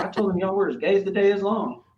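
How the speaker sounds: put-on Eastern Texas accent. Retelling the coworker's reply: imitating an eastern texas accent. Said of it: "he had a real, uh, Eastern Texas accent".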